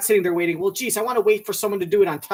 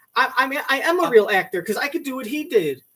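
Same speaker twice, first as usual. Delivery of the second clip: plain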